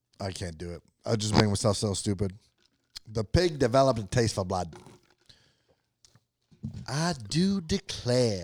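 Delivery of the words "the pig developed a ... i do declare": put-on southern belle accent, heavily played up. Trying out accents with another speaker, attempting a southern belle accent. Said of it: "think about like a southern belle".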